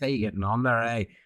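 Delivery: slight put-on Northern Irish accent. Showing how someone from northern ireland talks, northern irish accent. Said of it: "That's a wee Mary accent".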